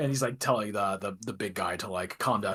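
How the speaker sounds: ordinary talk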